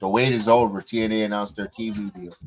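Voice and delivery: ordinary talk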